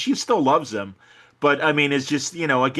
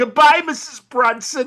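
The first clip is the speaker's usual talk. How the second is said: gleeful, relishing, very high-pitched, loud raised voice; 11 semitones higher, 5 dB louder than usual. Act out the landlord finally evicting a tenant, in a mock-gleeful Al Lewis landlord voice. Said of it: "he's just like in glee".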